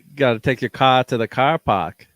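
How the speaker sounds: Bostonian accent. Offering to name boston towns in any accent, speaking in a boston accent. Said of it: "what accent would you like them in?".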